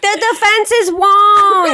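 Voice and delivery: put-on mimicked New York accent. Retelling how mom quoted a movie line: imitating mom's New York accent. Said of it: "she's trying to do the New York accent".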